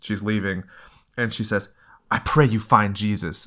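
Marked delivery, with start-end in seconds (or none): none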